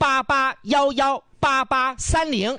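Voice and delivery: high, slow, drawn-out, spelled-out digits.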